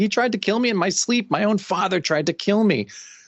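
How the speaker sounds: high-pitched screaming. Retelling a comic scene where a character wakes up: imitating someone screaming. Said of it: "She just starts screaming".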